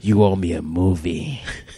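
very deep, low, slow, drawn-out angry voice. Acting out how the other person's angry side sounded, do a Clint Eastwood impression. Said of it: "That's how he sounded".

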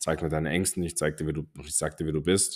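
plain

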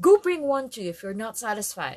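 loud, heated, hot-tempered snap. Narrator reading Brandon snapping back at Atteracial, snapped hotly. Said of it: "snapped Brandon hotly".

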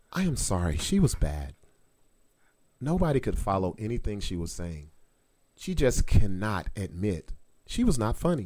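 gentle, soothing, even-voiced tone. Reading a comment aloud the way Patty would say it: imitating Patty's soothing voice. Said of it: "I'm gonna read it how I feel like Patty would say it".

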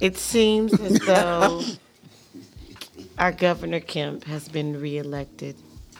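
glum, let-down, sad-sounding tone. Announcing news to co-hosts and listeners on a show: sounding sad. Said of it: "Why you say it like that? You sad?".

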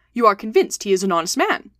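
plain reading voice

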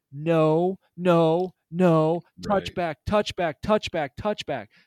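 put-on loud screaming yell. Retelling a bad call while watching a play: retelling screaming at the screen. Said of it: "I am screaming at the screen".

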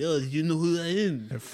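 put-on French accent. Retelling how a man acted after getting beat up, imitating his french accent. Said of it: "he's got that French accent".

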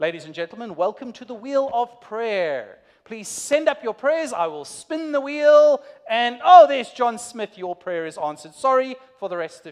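game show host announcing patter. Picturing God as a heavenly game show host, heavenly game show host voice. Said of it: "this kind of heavenly game show host".

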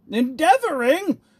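fierce outburst, very high and loud. The tyrant cries out at the wine-bewildered dwarf, fiercely. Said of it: "cried the tyrant fiercely".

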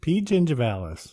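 high-pitched, bursting with energy. Repeating a bacteria name when asked to say it again: said with lots of energy. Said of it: "You said it with just, like, so much energy".

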